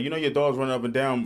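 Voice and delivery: ordinary delivery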